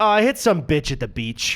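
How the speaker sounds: put-on casual, breezy shrug-off tone. Retelling a clerk's answer about her wrist cast: imitating a casual shrug-off tone. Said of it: "how she kinda said it in, like, a fun shrug off way".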